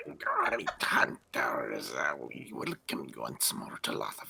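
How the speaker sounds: special swooping put-on character voice. Putting on the voice, the speaker greets the hunters in character. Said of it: "Gotta get the voice".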